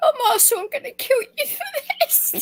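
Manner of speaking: talking through laughter. Laughing hard after another speaker's joke: laughing while talking. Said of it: "I've gotta stop laughing".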